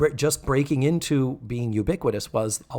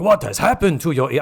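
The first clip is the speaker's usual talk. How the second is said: terrible put-on Japanese accent; 2 semitones higher, 6 dB louder than usual. You retell a scene where he sees her pierced ears, doing a terrible Mako impression with Japanese accent. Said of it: "I'm doing a terrible Japanese accent".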